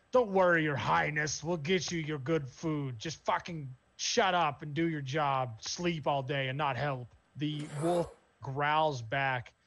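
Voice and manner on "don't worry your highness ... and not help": orc voice, half-yelled. Narrating a scene where the orc yells back at the wolf, yelling orc voice. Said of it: "The orc yells back at it".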